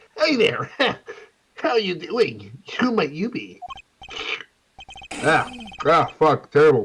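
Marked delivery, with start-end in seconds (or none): 0.2-3.6 irritating, high, annoying nerd character voice. Voicing a character greeting someone new: annoying nerd voice. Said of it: "do I wanna do an annoying nerd voice?".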